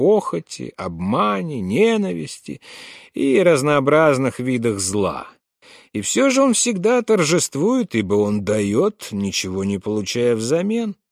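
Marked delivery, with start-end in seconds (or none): none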